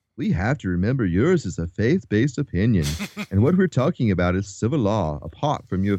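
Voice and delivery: put-on British accent, pundit-style voice. Quoting a man's reply from an interview, in a put-on British accent. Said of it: "I don't know why I'm making him sound British".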